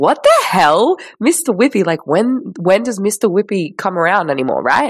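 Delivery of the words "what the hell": mock startled, sudden surprised exclamation. Recalling hearing Mr. Whippy from the lounge room: retelling a surprised exclamation. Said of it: "And I'm like".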